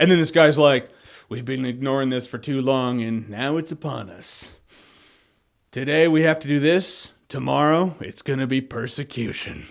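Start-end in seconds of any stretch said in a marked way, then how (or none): 1.3-9.7 sinister, low, slow, menacing movie-villain voice. Retelling what a guy said, put-on menacing villain voice. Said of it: "I know that was my villain voice".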